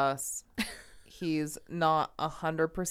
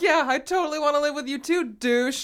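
put-on yell, higher and louder; 10 semitones higher, 6 dB louder than usual. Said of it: "yelled at the T V".

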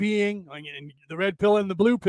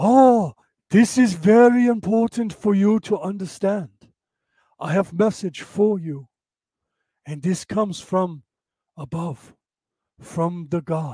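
slow, solemn, put-on broken-English foreign accent. Joking about sounding wise with glasses on, put-on slow foreign accent. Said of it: "do that".

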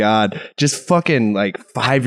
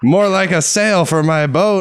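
put-on high-pitched grandpa puppet voice; 7 semitones higher than usual. Doing a Jeff Dunham puppet bit: Jeff Dunham grandpa puppet voice. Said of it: "I'm Jeff Dunham".

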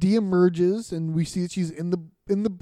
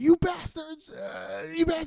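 muttered cursing, higher and quieter; 10 semitones higher, 4 dB quieter than usual. Recapping a scene where a man comes running up, muttering curses to himself. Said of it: "He's talking to himself".

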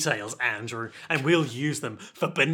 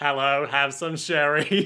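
acted robotic cyborg voice; 4 dB louder than usual. Joking about a cyborg offering sherry: cyborg voice. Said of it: "then the cyborg is like".

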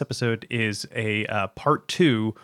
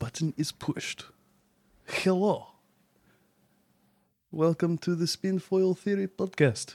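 put-on Russian accent throughout, pitched up; 7 semitones higher, 3 dB quieter than usual. Host opens the podcast while the co-host laughs; mock Russian accent. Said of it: "Why are you talking Today we in a discuss Russian accent?".

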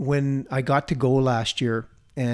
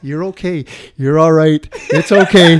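voice like an angel; 3 semitones higher, 12 dB louder than usual. Retelling a voice in your ear after a hard workout: imitating an angel's voice. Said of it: "hear that voice".

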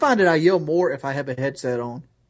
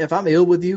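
ordinary delivery

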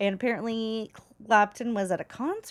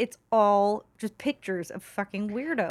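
plain

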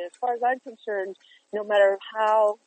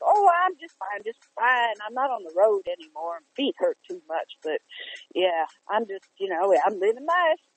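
relaxed, everyday conversational way of talking. Retelling how a brother talks when they speak: imitating Mark. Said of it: "that's how he talks".

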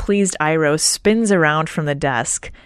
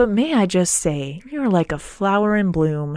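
put-on suave, smooth sweet-talking tone. Retelling an old man flattering a crabby clerk: imitating suave sweet-talking. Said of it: "suave and sweet-talking".

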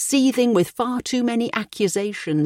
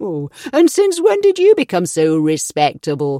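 loud, mocking, taunting jeer; 6 dB louder than usual. Told to mind his language, a man answers back, jeering. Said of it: "he jeered".

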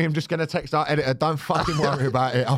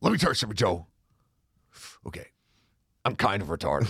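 put-on ranting talk-show voice, lower pitch; 7 semitones lower, 4 dB quieter than usual. Acting out a meme quote from a Joe Rogan interview: Alex Jones impression. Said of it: "that thing where he's like on Joe Rogan".

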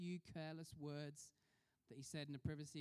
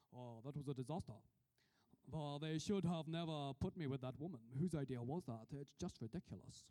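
put-on, raised Kirkcaldy Scottish accent; 5 dB louder than usual. Quoting a politician's private remark in the car: Gordon Brown Kirkcaldy accent. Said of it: "This is my best Kirkcaldy accent".

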